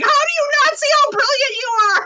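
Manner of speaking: mock, very high shouted yell. Speaker describing her work as a motivator acts out yelling at people: retelling her own yelling. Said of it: "I just start yelling at people like".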